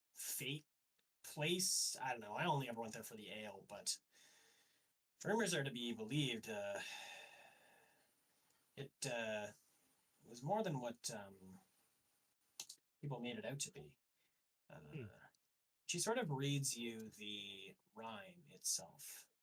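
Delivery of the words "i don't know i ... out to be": put-on old dwarf woman voice, rattled off quickly. Voicing an old dwarven woman who talks to the players in a role-play game. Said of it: "She's supposed to be like a little bit of a like a comely old um, dwarven woman, / She's supposed to be like a little bit of a like a comely old um, dwarven woman, unsuspecting is the / She's supposed".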